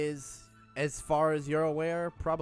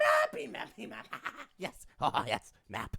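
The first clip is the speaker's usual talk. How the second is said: shouting in a character voice; 9 semitones higher than usual. Voicing the Rat King yelling from the corner: Rat King yelling. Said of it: "The Rat King, King in the corner yells out".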